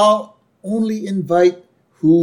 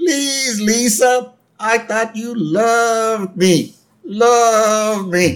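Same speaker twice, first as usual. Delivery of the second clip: tiny, high bleating lamb voice, 'love' drawn out; 7 semitones higher than usual. Retelling a cartoon scene where a lamb pleads with Lisa, in a little ba voice. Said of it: "little ba voice".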